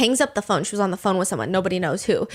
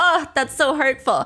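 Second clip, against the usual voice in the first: ordinary talk, nothing marked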